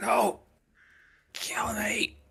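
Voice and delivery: put-on very high-pitched words wheezed out. Voicing a character who wheezes at a player's character, wheezing. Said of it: "he wheezes at you like".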